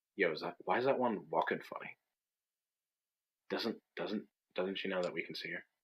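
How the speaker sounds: soft, hushed, half-whispered stage whisper. A dwarf half-whispers to their friends as someone sneaks past, half-whispering to friends. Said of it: "whisper to their friends".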